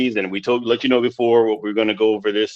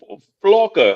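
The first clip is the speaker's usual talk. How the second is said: high, put-on Portuguese accent, stammered word; 8 semitones higher than usual. Retelling a movie skipper's line: imitating a Portuguese accent. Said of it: "in his Portuguese accent".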